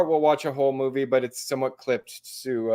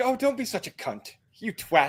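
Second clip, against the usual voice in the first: put-on English accent in a very high voice; 10 semitones higher than usual. Talking about how english and australian people swear, quoting them in a fake english accent. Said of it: "because you did it with your fake English accent".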